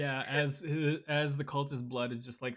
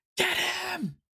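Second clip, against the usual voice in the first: very high, enraged, furious shouted yell; 5 dB louder than usual. Frustrated that she can't land a hit, she yells at her husband. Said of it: "she's just yelling at her husband".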